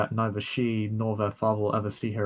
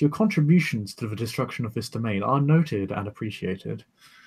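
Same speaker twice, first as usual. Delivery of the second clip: put-on posh, upper-class accent; 4 dB louder than usual. An unseen voice addresses the player, in a posh upper-class voice. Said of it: "a fairly kind of upper class, posh voice".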